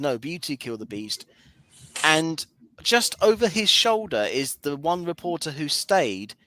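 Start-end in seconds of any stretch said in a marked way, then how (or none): 0.0-1.3 hushed, very quiet aside. Retelling how a film character says the final line: imitating a very quiet remark. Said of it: "very quietly says".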